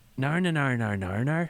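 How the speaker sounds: Northern Irish accent on repeated word nar. Showing how a Northern Irish accent sounds. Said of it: "it's Northern Ireland, so it is".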